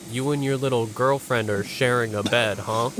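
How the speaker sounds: ordinary delivery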